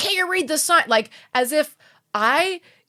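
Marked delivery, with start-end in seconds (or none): 0.0-0.8 acted-out irate, angry, high-pitched delivery. Retelling what the honking parking enforcement guy said: imitating an angry man. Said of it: "he's like so mad at me".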